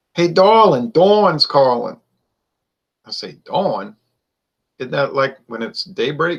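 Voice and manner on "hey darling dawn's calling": raised, high-pitched New Orleans accent. Showing how New Orleans people pronounce Dawn, in a New Orleans accent. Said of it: "in New Orleans, people pronounce the word Don... They'll pronounce that Dawn".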